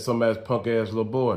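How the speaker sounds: ordinary talk, nothing marked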